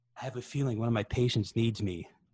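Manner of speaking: ordinary talk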